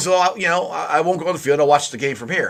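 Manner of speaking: ordinary delivery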